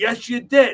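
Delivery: insistent loud high yelling.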